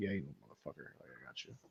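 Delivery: breathy, hushed whisper under the breath. Retelling a smirk after a forgiveness hug: imitating a smirking Roman Reigns. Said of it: "He's like".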